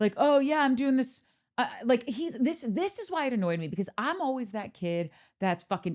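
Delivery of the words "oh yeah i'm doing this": cocky, boastful, bragging swagger, pitched up. Retelling how a dinner guest walks around: imitating Charlie's bravado. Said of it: "walks around with this bravado of".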